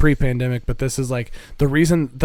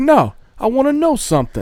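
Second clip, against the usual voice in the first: mock, very high, slow, shrill, sing-song swooping yell; 11 semitones higher, 4 dB louder than usual. Quoting a show character yelling at the panda: imitating someone yelling. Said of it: "yelling at the panda".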